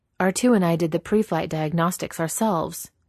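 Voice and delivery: ordinary talk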